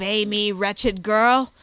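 put-on old man's very loud, agitated outcry. Reading a story, the narrator voices the old alchemist crying out to the girl, agitated. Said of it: "cried the old man in an agitated voice".

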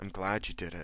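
husky-voiced. A man, his face dropped down to a woman's ear, speaks husky. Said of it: "he said huskily".

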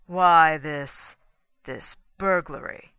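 icy sarcasm. Reading Douglas confronting his wife and a stranger: cold sarcasm. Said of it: "he demanded with cold sarcasm".

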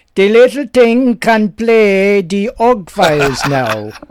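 unsure attempted Jamaican accent. Host reading a listener email, quoting the writer's uncle in attempted Jamaican accent. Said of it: "I'm not sure whether that's a Jamaican accent or not".

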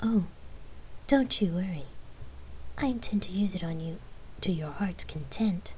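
sultry, seductive, teasing voice. A woman answers her partner's flirting before kissing her; sexy reply. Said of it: "Lark sexily replied".

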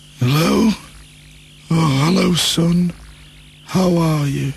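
weak, sickly voice, slow and drawn out. Imagining a father answering the phone from hospital, mock ill and poorly voice. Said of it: "could he sound kind of ill and poorly".

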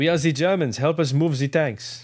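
put-on cartoonish French accent. Describing a video game, speaker imitates the German tank crew: Pepe Le Pew French accent. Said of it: "they talk like this".

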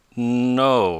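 slow, unhurried delivery. A young inventor turns down an invitation to come along, slowly. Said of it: "said Tom slowly".

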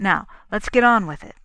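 impatient tone. Brainerd cuts in as Kennan begins explaining, impatient. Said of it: "Brainerd said impatiently".

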